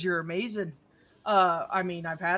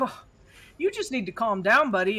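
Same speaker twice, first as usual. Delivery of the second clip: put-on Minnesotan accent; 2 semitones higher, 3 dB louder than usual. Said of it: "With a Minnesota accent".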